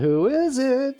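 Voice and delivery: very high, shouted-out yell. Telling a joke about a psychic at the door: imitating someone yelling. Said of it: "She yelled".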